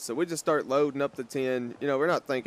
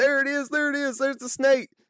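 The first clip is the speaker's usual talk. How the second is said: very high, frantic, full-volume shriek; 13 semitones higher, 3 dB louder than usual. Telling a story about an old woman on her patio table; retelling her screaming. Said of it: "And she starts screaming".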